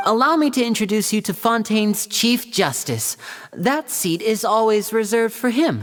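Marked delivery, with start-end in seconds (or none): none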